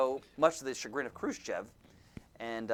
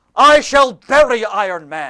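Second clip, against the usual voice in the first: very loud, slow, clumsy bad Russian accent; 10 semitones higher, 23 dB louder than usual. Speaker recounting a story, quoting Nikita Khrushchev: bad Nikita Khrushchev impression. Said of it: "I can't do a good Russian accent".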